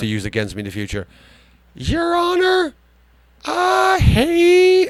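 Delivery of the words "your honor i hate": put-on old lady voice, much higher, slower. Speaker switches voices so the clip can't be used against him: little old lady voice. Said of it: "Let me do it as a little old lady".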